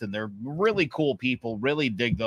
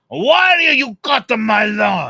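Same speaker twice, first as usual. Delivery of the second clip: put-on Italian accent, much higher and louder; 11 semitones higher, 11 dB louder than usual. Retelling a guy who flagged him down in his driveway: imitating an italian accent. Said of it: "so I could do the accent".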